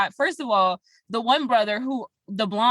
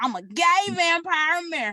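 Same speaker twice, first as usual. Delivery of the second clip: put-on twangy accent, pitched up higher; 7 semitones higher than usual. Showing another speaker how a show character said the line: twangy accent. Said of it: "You gotta do it with the, the twang".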